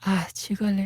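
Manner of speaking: said softly. Asked to say the Korean line but soft, the speaker says it soft. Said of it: "say 죽을래, but soft".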